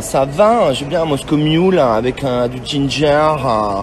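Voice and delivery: very slow, stuffy-nosed, nasal drawl. Mocking people who talk with a nasal voice: imitating a nasal talker. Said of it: "Ceux qui parlent comme ça".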